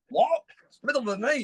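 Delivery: groggy, high, startled disbelief.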